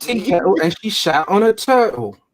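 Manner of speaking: put-on English accent, high, very slow, drawn out. Repeating a line from a scene: imitating an English accent. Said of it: "that's the English accent".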